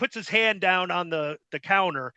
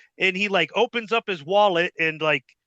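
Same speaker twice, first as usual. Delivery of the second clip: ordinary talk, nothing marked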